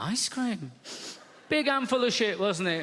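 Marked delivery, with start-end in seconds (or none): 0.0-0.7 acted-out baffled, puzzled tone. Retelling his reply to his daughter in the bath, his own surprised reply. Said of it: "I was like".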